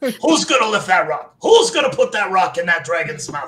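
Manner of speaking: very loud, high-pitched energetic yell. Coaching another player from the background, in Mickey from Rocky coaching voice. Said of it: "I start coaching you like Mickey".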